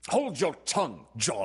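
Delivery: sharp, snapped-out delivery. Reading a story, a father cuts off his son; snapped out. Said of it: "his father snapped out".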